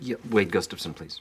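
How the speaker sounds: acted deadpan phone voice, flat and emotionless. Retelling a film scene of a phone call to the receptionist: imitating a flat unemotional voice. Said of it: "in an entirely non-emotional voice".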